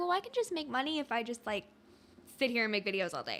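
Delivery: light mock sass on a generic voice. Mimicking how people talk about making money with videos, mock-sassy. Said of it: "you said that with like a little sass".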